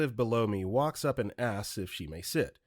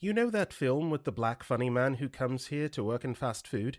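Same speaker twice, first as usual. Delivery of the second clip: prim and proper put-on British-like accent. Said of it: "with her prim and proper accent".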